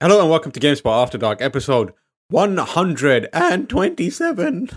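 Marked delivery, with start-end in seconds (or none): 2.3-4.7 voice breaking and cracking, pitched up. Podcast host opening the episode, voice cracking. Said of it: "My voice broke".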